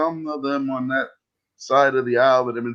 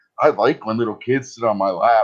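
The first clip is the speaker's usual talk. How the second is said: plain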